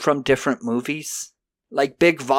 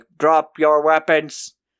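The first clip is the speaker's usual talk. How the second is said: weak, wimpy robot voice. Recapping a scene where backup arrives, doing the Android Cop robot voice. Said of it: "a robot voice of like".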